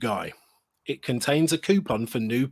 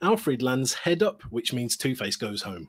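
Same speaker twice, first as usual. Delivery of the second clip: ordinary talk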